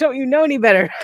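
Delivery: yelling. Retelling watching ghost shows, imitating yelling at the TV. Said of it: "I'm yelling at the T V".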